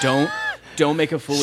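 ordinary talk

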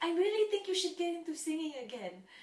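put-on cute, little, very high Spanish accent. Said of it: "she has this like cute little accent".

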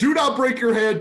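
high, loud scream. Retelling screaming at the TV during a fight: imitating own screaming. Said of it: "I was screaming at my T V".

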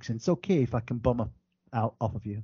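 put-on British accent. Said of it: "If I say it in British accent".

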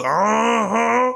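"uh-huh" stretched out, very high, shrill, creaky, rasping. Quoting a cartoon character's catchphrase: imitating Cleveland's wife. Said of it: "Cleveland's wife who goes".

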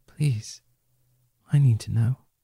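whispered voice. Voicing a character whispering into another's ear during an embrace: whispering. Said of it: "And he whispers in his ear".

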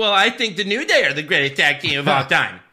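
loud, catty, snippy delivery. Retelling what Michael Cole said to a tag team: Michael Cole impression. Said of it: "It's a good Michael Cole impression".

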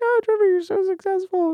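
sad, very high-pitched, lamenting voice. Retelling what a girlfriend says when she gets sad: impression of Destiny. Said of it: "It was a great impression".

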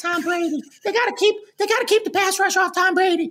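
put-on elf voice, very high-pitched and fast. Mimicking a kid's football talk, in a put-on elf voice. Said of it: "I think that's an elf voice".

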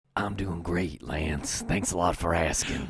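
put-on very low, soothing, easygoing Southern accent with charm. Answering a co-host's greeting in a Brandon Schexnayder impression. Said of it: "that is my Brandon Schexnayder impression".

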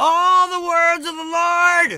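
very high projected yell with Lord drawn out. Showing a listener how they yell so it still carries: yelling upward. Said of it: "See, just like that".

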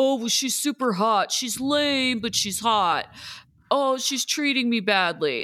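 mocking, sarcastic dude voice. Speaker complaining about certain dudes they have no empathy for; mocking shallow dudes. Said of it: "I have no empathy for dudes that are like".

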